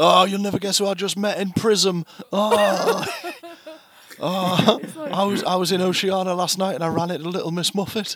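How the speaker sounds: put-on acted-out drunk voice. Acting out a drunk voicemail left on a night out: imitating a drunk voicemail. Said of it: "leaving drunk voicemails on Kirk's phone".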